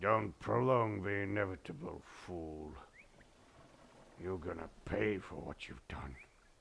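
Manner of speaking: booming voice, a bit muffled. Game master voicing an old man disappearing back into the crowd, booming slightly muffled voice. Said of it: "you hear the same booming voice again".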